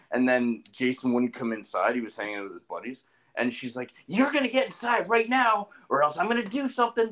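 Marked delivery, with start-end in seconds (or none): 4.0-7.1 very high, angry, pissed-off tone. Retelling what a mom told her son outside: imitating a pissed-off mom. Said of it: "really pissed off".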